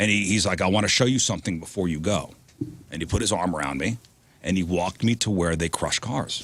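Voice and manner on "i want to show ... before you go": thick put-on Russian accent, lower pitch. Retelling what a tall intimidating man said: thick Russian accent. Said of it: "big Russian guy with a thick accent".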